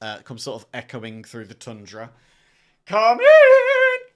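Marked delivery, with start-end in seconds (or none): 2.9-4.0 very high, very loud, shrill piercing cry. Narrator describing a voice echoing through the tundra, very shrill voice. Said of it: "you hear a very shrill voice come from".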